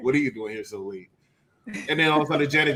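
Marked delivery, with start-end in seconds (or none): 0.0-1.1 radio announcer voice. Retelling a co-host's version of the Love Talk and Slow Jams voice. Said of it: "sounding like Love Talk and Slow Jams".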